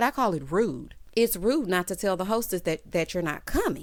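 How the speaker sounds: ordinary talk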